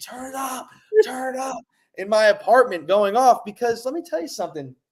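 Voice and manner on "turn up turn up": high-pitched mock screaming.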